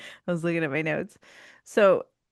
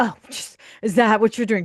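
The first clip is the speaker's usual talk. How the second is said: snippy man voice, louder; 3 semitones higher, 5 dB louder than usual. Retelling a scene, imitating a man getting snippy with her: imitating a snippy man. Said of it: "He gets kinda snippy with her".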